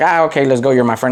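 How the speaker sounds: ordinary talk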